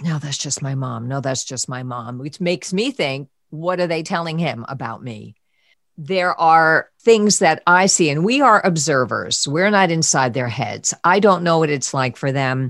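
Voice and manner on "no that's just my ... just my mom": whispered, lower. Retelling how the son whispered under his breath: imitating someone whispering. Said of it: "I've heard him whisper under his breath".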